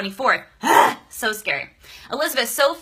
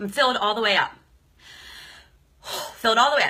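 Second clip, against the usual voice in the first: near tears, about to cry; 3 dB quieter than usual. On a livestream, greeting a viewer, near tears. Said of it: "I might cry on this live".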